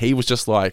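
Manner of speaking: ordinary delivery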